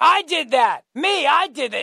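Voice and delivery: wild, crazed yell, high-pitched and drawn out. Recalling a debate where Biden interrupted everybody, retelling Biden yelling. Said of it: "starts yelling".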